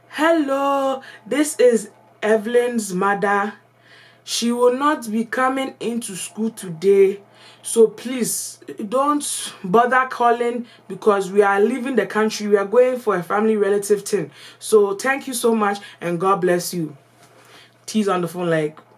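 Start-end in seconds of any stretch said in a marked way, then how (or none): 0.1-16.9 put-on full, unhidden Ghanaian accent. Retelling a call to school, posing as her own mother: african accent. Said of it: "This is where my African accent came into play".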